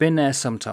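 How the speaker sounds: normal talking voice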